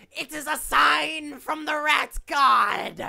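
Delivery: very high, very loud, slow, drawn-out rasping bellow. Voicing a rat-cult leader proclaiming a sign to followers: character yelling as rat king. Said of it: "the same voice that, uh, you, you heard soapboxing nonsense before yells".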